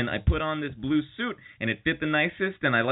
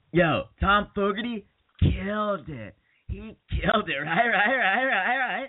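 slow, stretched-out, pitched-up voice; 5 semitones higher than usual. Retelling what a friend said at a college reunion: Ben impression. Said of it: "That's my Ben impression".

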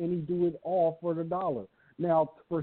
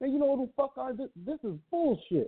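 impassioned, pitched-up griping outburst; 7 semitones higher than usual. Quoting a man upset about his sparring partner, retelling a passionate complaint. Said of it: "you can hear the passion in his voice".

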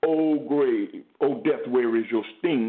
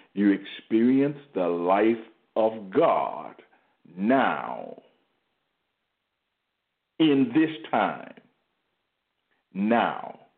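unhurried, slow delivery, each "now" drawn out; 3 semitones lower than usual. Speaker wants the words to sink in for listeners, saying it slow. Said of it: "I'm saying it slow".

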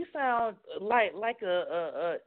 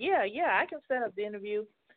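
acted confident, self-assured tone. Retelling how a source agreed to set up an interview: imitating a self-assured reply. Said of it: "she sounds so sure of herself".

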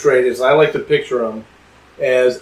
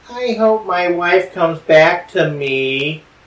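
slow, whiny, complaining voice; 4 semitones higher than usual. Retelling a character watching a Mardi Gras parade, put-on whiny voice. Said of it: "whiny voice here is on purpose".

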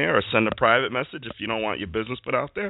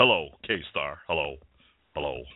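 put-on voice, pitched much lower; 8 semitones lower, 3 dB quieter than usual.

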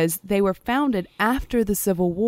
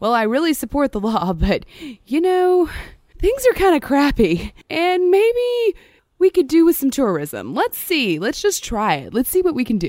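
put-on loud, raised, swooping, sing-song Southern accent; 7 semitones higher, 6 dB louder than usual. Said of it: "Now give him a Southern accent".

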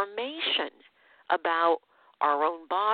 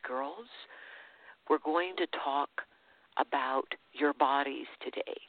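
very secretive, hushed, confiding, conspiratorial tone; 3 semitones lower, 5 dB quieter than usual. Retelling a Sunday school teacher addressing the girls in a dark room, very secretive voice. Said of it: "in a very secretive voice".

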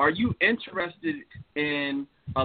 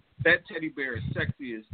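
ordinary talk, nothing marked

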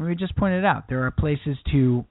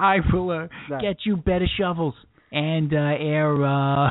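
put-on Boston politician speaking voice. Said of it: "a Kennedy campaign speech".

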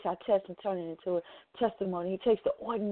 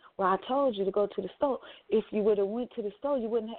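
ordinary delivery

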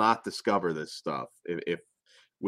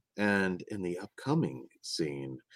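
put-on pretentious director voice, quieter; 7 dB quieter than usual. Pretending to record a film commentary: mock-serious Criterion-style commentary. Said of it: "really serious Criterion style".

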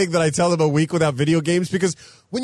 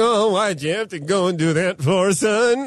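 put-on angry whining voice. Recalling how his grandfather scolded the kids, imitating an angry whine. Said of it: "he would get so angry that he would start to whine".

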